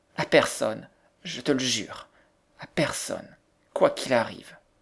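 ordinary talk

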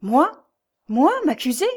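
high, halting, bewildered stammering falter. A young woman, told by a man she will be accused, stammers in reply. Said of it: "balbutia Jeanne, dont la tête s'égarait".

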